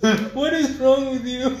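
high laughing outcry, sounding disbelieving.

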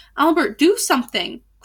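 crying out in alarm. As a drawbridge lowers toward attacking men, someone calls for help, crying out in alarm. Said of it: "cried Igraine in alarm".

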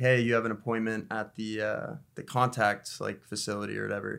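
ordinary talk

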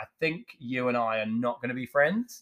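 ordinary talk

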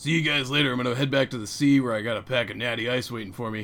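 loud, dumb-sounding, bro-y surfer dude voice. Imitating how a character they found dumb talked, in a bro-y surfer dude voice. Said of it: "He talked like that".

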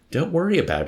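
gentle comforting tone. A man consoles a heartbroken man after a girl walks out, kindly consoling. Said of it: "Yessarian consoled him as kindly as he could".

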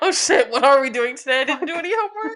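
frantic, high, very loud panicked yelling. Acting out the other speaker almost forgetting the plan: imitating someone panicking. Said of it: "I was like, panic".

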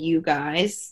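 ordinary delivery

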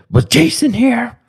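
put-on shrill, very high old woman yell. Retelling hearing someone call out from the house: imitating grandma yelling. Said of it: "suddenly I'd hear my grandma yell".

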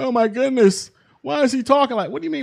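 startled, taken-aback, shocked exclamation. Imitating people reacting to a man on screen: imitating shocked people.

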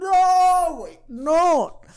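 shocked exclamation.

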